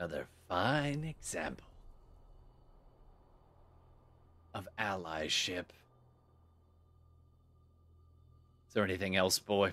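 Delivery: fierce, charged, intense, swooping delivery. Voicing a scowling ship captain replying to a young stranger: intense, scowling tone. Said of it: "with this intense look".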